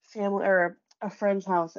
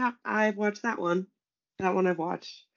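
ordinary delivery

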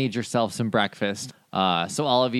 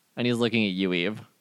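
plain

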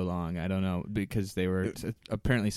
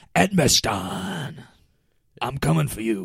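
loud, drawn-out eighties pro wrestler promo voice; 5 semitones higher, 6 dB louder than usual. Explaining the way the name was said, like an eighties wrestler. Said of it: "I did it like a wrestler".

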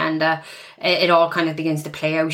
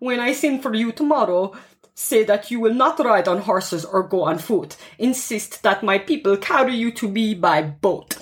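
put-on vampire accent; 5 semitones higher than usual. Retelling Olga's instructions to her people, in a Dracula-style accent. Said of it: "I also really like the Dracula kind of accent".

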